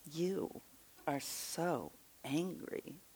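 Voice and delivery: prim, prissy, very hushed, reproachful voice. Imitating a woman who stood up at a Q&A, mimicking a prissy woman. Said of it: "she sounded so prissy".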